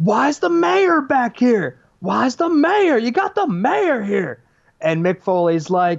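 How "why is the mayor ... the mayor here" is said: rowdy, shrill, swooping yelling, very high. Retelling how the Nasty Boys burst in backstage, imitating them yelling. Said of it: "they start yelling".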